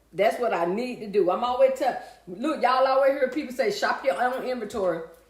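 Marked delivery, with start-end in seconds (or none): none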